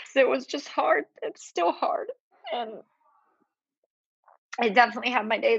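high, tearful, crying speech with voice breaking. Podcast guest talking about a hard time, crying. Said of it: "I'm crying on your podcast".

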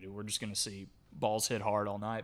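ordinary delivery

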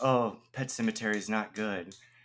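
very quiet, hushed muttering under the breath. Retelling what Megan said about a movie: imitating Megan mumbling under her breath. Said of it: "mumbled under her breath".

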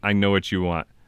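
plain

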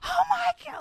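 mock very high, piercing, loud shriek. Retelling a movie scene where a man gets shot by an arrow: imitating someone screaming. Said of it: "she's just screaming".

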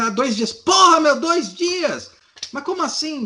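very high-pitched, drawn-out, indignant delivery. Retelling another person's reaction that turned into cursing, mock-indignant cursing. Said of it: "Começa a xingar".

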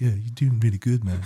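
put-on hippie accent, like a snake voice. Speaker demonstrates the voice given to the snake in the show, hippie accent. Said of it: "I give him like a hippie accent".

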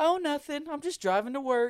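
breezy, offhand, nonchalant, very high-pitched voice. Retelling how his wife answered his phone call: imitating wife speaking nonchalantly.

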